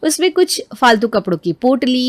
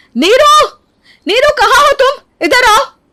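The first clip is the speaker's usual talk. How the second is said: furious, shrill, very high-pitched angry yelling; 13 semitones higher, 6 dB louder than usual. Coming home to find her flowerpots gone, she calls her sister-in-law, angry shouting. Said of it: "आप इतना चिल्ला क्यों रही हैं?".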